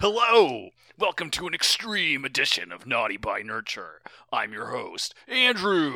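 put-on masculine dude voice. Announcing the podcast episode intro again, in a put-on masculine voice. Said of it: "I've expended all of my masculine energy".

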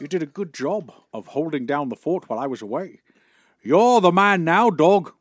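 put-on English accent. Doing a bit about Sean Connery's lines: Sean Connery impression. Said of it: "In his perfect English accent".

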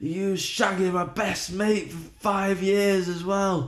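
put-on very drunk voice. Retelling an argument between a man and a woman, imitating a very drunk man. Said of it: "pissed off his head".

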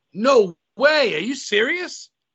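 high, swooping, thrilled, disbelieving excited yell. Hearing the other speaker was at WrestleMania live, excited yelling. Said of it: "sorry for yelling".

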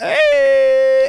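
put-on high, loud, drunk, out-of-it voice. Describing a guy they know, imitating how he greets people when wasted. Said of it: "But when he's fucked up".

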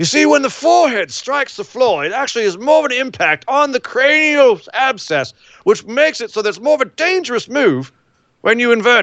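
high, put-on British accent.

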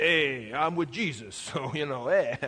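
tough mob wiseguy voice. Speaker imitates someone taking on a demon, in a mob-style voice. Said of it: "you sound like you belong in the mob".

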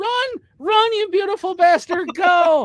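mock very high, loud, drawn-out cheering yell. Retelling how they cheer on people fleeing police: imitating own cheering. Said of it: "And now I cheer them on, and I go".

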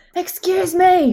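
loud shouting, calling out. Shouting after a man who keeps walking away: shouting after someone. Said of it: "I shout".

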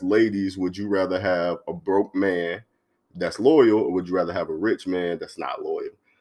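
ordinary talk

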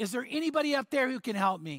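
mock frantic, desperate crying out. Telling a story, voicing a hanging man as he cries out. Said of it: "he cries out".

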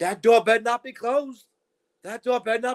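high, full-volume, top-of-the-lungs scream. Retelling a woman at an airport terminal, imitating a woman screaming. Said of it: "she's screaming at the top of her lungs".

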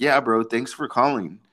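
dry, sarcastic, mock-grateful tone. Retelling a childhood friend's reply to news of a move, mimicking Andy's sarcasm. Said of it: "he sarcastically".

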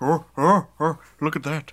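loud, belted-out comedian voice. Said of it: "That's my go-to Robin Williams impression".

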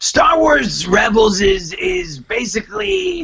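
very high, squeezed, rough voice. Taking over the comedian's podcast quote: Jason Mantzoukas impression. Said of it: "Then I'll do it".

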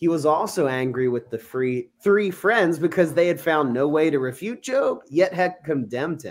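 normal talking voice

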